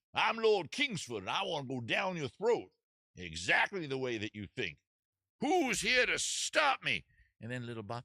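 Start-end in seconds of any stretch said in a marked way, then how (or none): 0.2-7.1 put-on southern gentleman voice. Narrating a story, voicing Lord Kingsford, an intruder, as a southern gentleman. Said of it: "why he's a southern gentleman".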